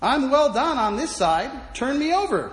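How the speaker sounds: bright, cheery cry, acted out. Telling a saint's legend, the speaker acts out Lawrence's words: retelling a cheerful cry. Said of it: "Lawrence cheerfully cried out".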